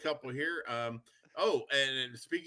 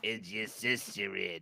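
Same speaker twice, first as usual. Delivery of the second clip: put-on very slow, low, dragged-out old-lady voice; 5 semitones lower than usual. Repeating an old lady's question from the story: Harvey Fierstein voice. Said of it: "that's Harvey Fierstein".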